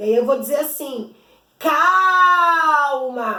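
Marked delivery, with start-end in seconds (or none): 1.6-3.4 lengthened, stressed first syllable cal in calma. Portuguese lesson on finding the stressed syllable: drawn-out stressed cal in calma. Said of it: "é o cal que sai mais demorado, mais pausado".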